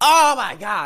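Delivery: very high-pitched, very loud, shrill outburst. Retelling how the Uber driver reacted: imitating the Uber driver's exclamation. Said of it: "like this".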